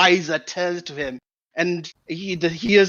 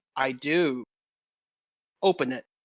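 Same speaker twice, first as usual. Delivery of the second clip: voice carrying a heard scowl; 4 semitones lower, 7 dB quieter than usual. Playing a character who can't stare him down, so gives the scowl: scowling voice. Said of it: "you can hear the scowl on my voice".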